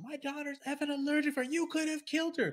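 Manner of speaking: play-acted, furious, irate, very high-pitched screaming. Telling a story about a customer at the counter: retelling an irate customer's scream. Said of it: "like like irate".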